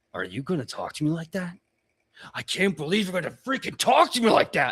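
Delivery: affronted, angry, threatening orc warrior voice, rising. Voicing a female orc warrior who snaps at her camp: angry female orc warrior. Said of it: "she really kinda goes".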